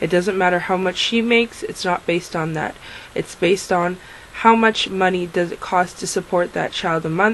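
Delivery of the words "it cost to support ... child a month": normal talking voice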